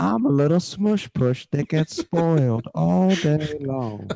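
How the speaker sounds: talking house cat voice. Doing an impression of a pet cat when asked: impression of Azula the cat. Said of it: "Can you do an impression of your cat".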